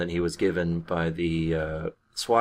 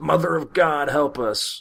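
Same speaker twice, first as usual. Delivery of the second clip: shrill, very high-pitched yell; 9 semitones higher than usual. Retelling a movie scene as the police back off: imitating Chris Farley yelling. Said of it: "as Chris Farley yells".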